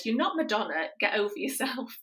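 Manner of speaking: put-on blunt, cutting teenage-sounding put-down tone. Retelling a daughter's reply to a plea for help: imitating Hannah's teenage retort. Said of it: "as only teenage kids can say".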